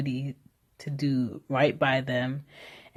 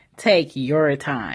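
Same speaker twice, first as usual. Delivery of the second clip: your time stressed loud and slow, emphatic. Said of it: "Emphasis on your time".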